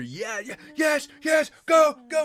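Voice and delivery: very high, very loud swooping excited cheering scream. Imitating the other speaker screaming while the game is on: imitating someone screaming excitedly. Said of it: "You are screaming either".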